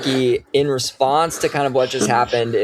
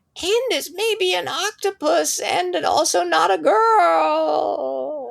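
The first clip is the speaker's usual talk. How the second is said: very high, creaky, otherworldly, faraway ethereal voice. Describing a voice heard from far off in the woods: ethereal distant voice. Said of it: "kind of in this ethereal voice".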